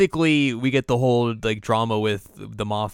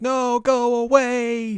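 mock yelling, higher; 14 semitones higher than usual. Retelling a movie scene where a character yells at herself: imitating someone yelling. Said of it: "yelling at herself".

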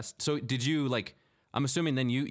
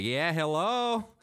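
put-on Midwestern accent, pitched up; 7 semitones higher than usual. Retelling how someone greets when coming home: imitating a midwest accent. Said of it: "a kind of a Midwest accent thing".

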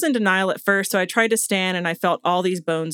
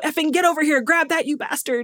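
screamed, pitched-up, cursing; 8 semitones higher than usual. Retelling how a climber screamed at his companion: imitating someone screaming. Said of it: "he starts screaming at Richard".

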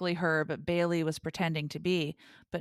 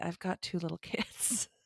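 mock-sad, put-on sadness, spoken more quietly; 7 dB quieter than usual. Retelling how a man answered two people disgusted with him, imitating someone speaking sadly. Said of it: "he kind of said sadly".

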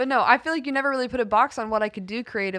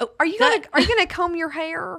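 put-on elderly Southern woman voice, much higher pitch; 8 semitones higher, 4 dB louder than usual. Trading church-morning lines with a partner: old Southern mom voice. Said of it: "I love to talk like an old Southern mom".

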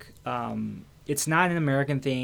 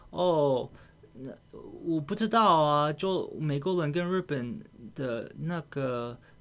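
put-on Japanese accent, much slower. Retelling what a japanese woman said about americans: japanese accent. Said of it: "she says with a Japanese accent".

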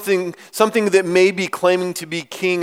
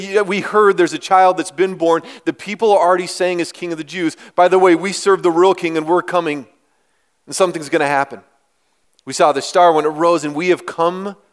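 normal talking voice

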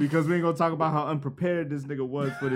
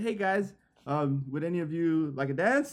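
rigid, wooden, stiff, stilted polite voice; 3 dB quieter than usual. Retelling a woman who bent down and asked the group to dance, imitating her stiff manner. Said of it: "she was mad stiff".

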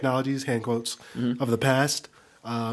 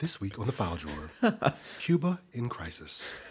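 soft, swooping public-radio announcer voice; 3 semitones lower, 7 dB quieter than usual. Joking that the podcast is turning political, announcing the episode: NPR announcer voice. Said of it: "that's a great NPR voice".

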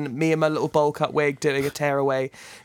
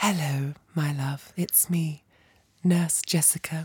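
put-on ASMR whisper-soft voice; 5 dB quieter than usual. Retelling an ASMR video her boyfriend watches: imitating ASMR Nurse Jessica. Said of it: "she's like".

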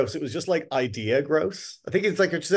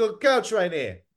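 put-on inner-city Dublin accent; 4 semitones higher than usual. Acting out what someone would say about the couch: Sheriff Street Dublin accent. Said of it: "You had the Sheriff Street accent perfect".

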